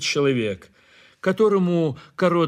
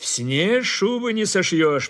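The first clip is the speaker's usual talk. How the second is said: contemptuous, scornful tone; 4 semitones higher than usual. Lihonin replies to a man in the group, contemptuously. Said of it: "презрительно заметил Лихонин".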